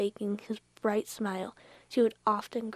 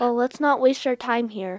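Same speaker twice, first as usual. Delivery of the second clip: stern, raised voice with no softness; 7 dB louder than usual. A man who has just wiped away a tear speaks to the others sternly. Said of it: "Mr. Ruthbert said sternly".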